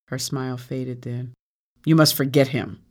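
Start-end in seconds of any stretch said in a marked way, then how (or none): 1.8-2.6 harshly spoken. A woman answers her tearful companion, harsh. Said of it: "Afi told her harshly".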